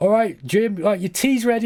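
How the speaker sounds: high, called-out shout across a distance. Retelling how a YouTuber's wife would call him, imitating a wife shouting. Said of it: "his missus would shout him like".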